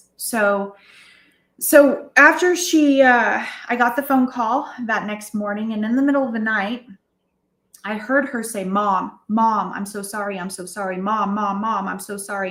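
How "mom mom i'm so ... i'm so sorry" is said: tearful voice while crying. Retelling what was heard in the middle of the night: retelling someone crying. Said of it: "And she was crying".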